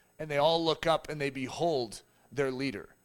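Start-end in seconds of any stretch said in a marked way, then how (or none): none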